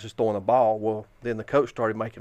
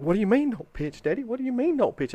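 mock very high, panicky, frantic little-girl voice; 12 semitones higher than usual. Retelling his daughter's reaction to being told not to pitch, imitating his panicking daughter. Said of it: "she's freaking out".

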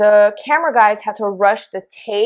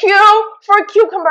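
put-on yell, higher and louder; 10 semitones higher, 4 dB louder than usual. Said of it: "He's yelling".

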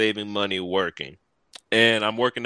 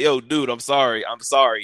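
put-on drunk man voice, higher and louder; 3 semitones higher, 5 dB louder than usual. Retelling how a woman's husband apologized: imitating a drunk man. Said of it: "He's drunk".

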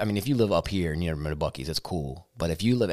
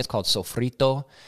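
put-on Spanish accent on sofrito, pitched up; 5 semitones higher than usual. Naming a seasoning a friend makes, with a put-on Spanish accent. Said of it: "did you like the accent?".

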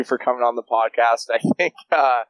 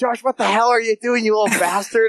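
acted, very high-pitched, furious, angry yelling; 10 semitones higher than usual. Retelling how grandpa told him off: imitating grandpa yelling angrily. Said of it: "he totally lit me up".

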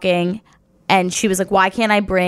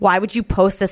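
put-on passive-aggressive voice. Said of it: "passive aggressively be like".

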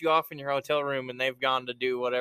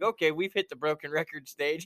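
ordinary delivery

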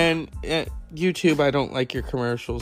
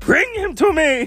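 put-on witch voice, much higher and louder; 7 dB louder than usual. A speaker urges listeners to see a documentary, quoting The Witches: Grand High Witch impression. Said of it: "as she says in The Witches".

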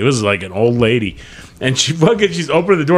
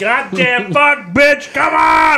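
very high, long, drawn-out shrieking scream; 14 semitones higher than usual. Retelling losing it in the car at the car wash, reenacted screaming. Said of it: "I'm screaming and screaming".

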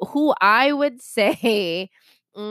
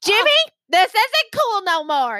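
put-on upset man's yelling, pitched higher; 11 semitones higher than usual. Imitating Kenny telling cameraman Jimmy to stop taping: imitating Kenny. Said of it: "That's not how Kenny sounds at all".

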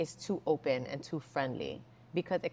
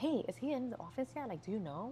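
quiet, soft, slightly high half-whisper; 6 semitones higher, 6 dB quieter than usual. Retelling asking an executive assistant if he is in the office, half-whispering. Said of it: "I whispered".

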